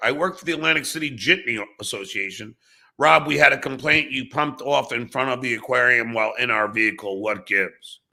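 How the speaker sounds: usual speaking voice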